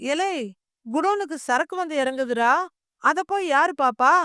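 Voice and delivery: ordinary delivery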